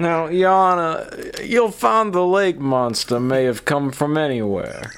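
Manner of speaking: put-on simple Southern accent in courtroom lawyer style. Playing a lawyer addressing yana in court, in a southern lawyer voice. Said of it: "He's got the Southern lawyer voice".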